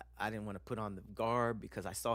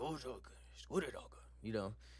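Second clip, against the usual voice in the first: put-on strong, thick Japanese accent; 5 dB quieter than usual. Retelling a stay, the speaker quotes a guy who walked over, strong Japanese accent. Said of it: "he did that strong Japanese accent".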